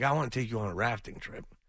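normal talking voice

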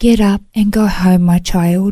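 beautiful, tender, gentle, loving voice. Recounting a spiritual experience, imitating God's tender, loving voice. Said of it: "in the most beautiful, tender, gentle, loving voice".

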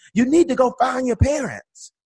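loud, very high, country-style holler. Retelling a man from the country yelling at you and your sister, retelling a loud country yell. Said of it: "And he yells at us".

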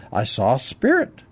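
normal talking voice

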